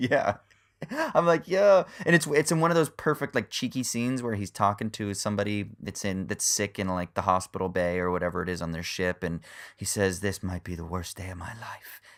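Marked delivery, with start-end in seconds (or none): 10.2-12.0 hushed, quiet, rough, gravelly British voice. Describing a scene where he talks to someone sick, gravelly British voice. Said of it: "in his like gravelly British voice".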